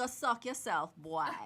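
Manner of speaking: loud put-on Jamaican accent. Throwing a jab during a group conversation, in a Jamaican accent. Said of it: "in my Jamaican voice".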